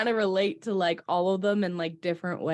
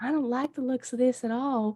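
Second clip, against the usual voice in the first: put-on Southern accent, pitched up, carried on; 5 semitones higher, 3 dB quieter than usual. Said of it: "now I'm gonna keep talking in a Southern accent".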